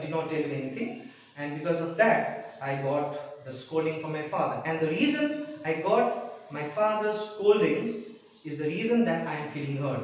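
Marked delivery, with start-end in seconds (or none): none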